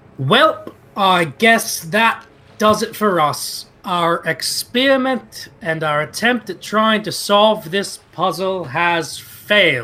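very loud, high-pitched, forceful delivery. In a roleplay, Burbage addresses the family, very loud. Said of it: "Burbage will say very loudly".

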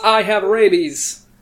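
loud yell. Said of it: "and yell".

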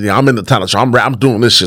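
ordinary talk

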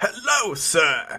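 high, put-on character voice. Asked for their best Mr. Handy, the speaker offers a greeting: Mr. Handy voice. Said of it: "can I get an impersonation of your best Mr. Handy".

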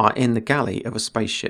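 ordinary delivery

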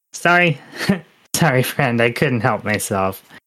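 gnome voice bubbling with laughter, giggling. Voicing a gnome who pulled a prank: gnome laughing while talking. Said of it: "you just hear laughter".

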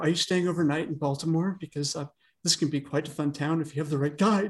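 creepy, sleazy, suggestive put-on voice. Retelling a man hitting on a woman, in a creepy impression. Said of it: "It's a creepy impression".

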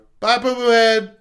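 acted loud shout. Parent recounting their child at bedtime as the door closes, retelling a really loud yell. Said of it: "really loud".

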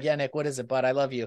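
soft, hushed stage half-whisper, right up close. Acting out a future visit at death's door: pretend half-whisper. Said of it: "I'm gonna whisper".

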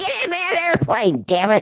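put-on shrill yell, pitch swinging wildly. Retelling watching someone stand outside a plane: retelling a scream. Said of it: "I'm screaming at him".

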